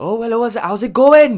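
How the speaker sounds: put-on high Welsh accent. Retelling meeting Sean Smith at a festival: Welsh accent impression. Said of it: "that's not a bad Welsh accent".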